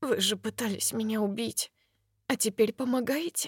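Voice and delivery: quivering, shaken, unsteady trembling voice. Facing a man who once tried to kill her, a woman speaks in a trembling voice. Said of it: "Ее голос дрожит".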